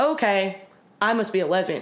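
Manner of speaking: ordinary talk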